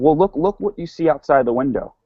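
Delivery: ordinary delivery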